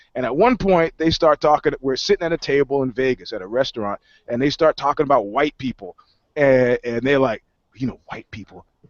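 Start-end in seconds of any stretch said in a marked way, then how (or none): 7.8-8.7 soft, hushed, secretive stage whisper. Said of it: "what the fuck are you whispering for?".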